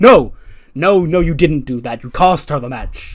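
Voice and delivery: mock yelling, shouting.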